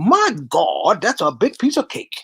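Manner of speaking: played-up, acted sitcom bit-part extra voice. Retelling what a neighbor said on seeing a huge cake: imitating an Amos and Andy extra. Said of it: "That's the way he said it".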